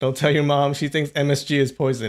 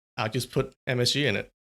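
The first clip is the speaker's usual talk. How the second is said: ordinary talk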